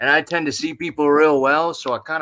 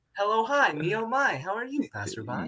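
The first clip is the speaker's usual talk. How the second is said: bright, cheery, sing-song customer-service voice; 7 semitones higher, 7 dB quieter than usual. Teasing the listener for switching voices during a piece: mocking cheery customer-service voice. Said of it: "like cheery like customer service voice".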